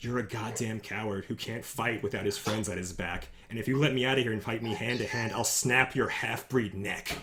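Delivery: threatening, menacing, hushed stage half-whisper. A game master voicing a prisoner who leans in so others won't hear, half-whispering. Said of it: "he leans in and he whispers quietly so the others won't hear him".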